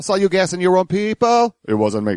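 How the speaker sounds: Russian accent, pitched very high. Asked to try the bit in a Russian accent, the speaker does it: Russian accent. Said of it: "Try and do that in a Russian accent".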